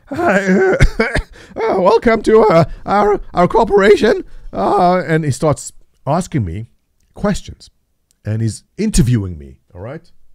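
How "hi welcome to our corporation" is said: put-on cracking teen voice, much higher, slower. Retelling a job interview, quoting the interviewer in the Simpsons teenager voice. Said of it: "it's like the teenager voice from Simpson".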